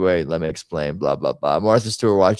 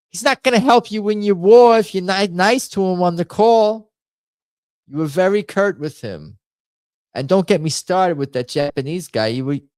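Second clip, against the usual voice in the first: put-on very high, thick Brooklyn accent; 13 semitones higher, 4 dB louder than usual. Performing a one-act play as Eva Braun scolding Adolf: Eva Braun in thick Brooklyn accent. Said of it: "I pretend I'm Eva Braun telling".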